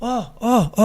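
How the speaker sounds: high shouted call. Retelling Ferreira arriving in the locker room: imitating Ferreira shouting. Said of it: "o Ferreira chega gritando".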